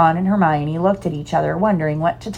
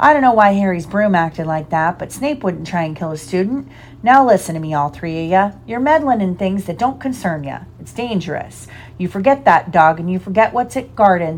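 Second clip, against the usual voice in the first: plain reading voice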